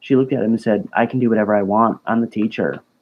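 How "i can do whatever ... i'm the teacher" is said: put-on deadpan, flat and emotionless, much faster. Quoting the teacher's reply after being told she can't, retelling it deadpan. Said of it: "her response was deadpan, like no emotion".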